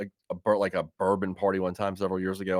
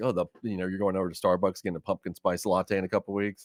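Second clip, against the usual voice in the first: ordinary talk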